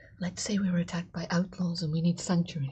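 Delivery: very quiet, hushed, low-volume voice. During a tabletop game, a player voices their character's suggestion to the group, really quietly. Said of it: "really quietly".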